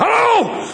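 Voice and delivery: angry, very high-pitched barked delivery.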